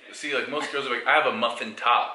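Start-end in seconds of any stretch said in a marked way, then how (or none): none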